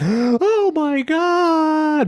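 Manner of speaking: very high, loud shrieking exclamation. Recounting two women reacting to a story, imitating women shrieking. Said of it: "both women shrieked at the top of their lungs".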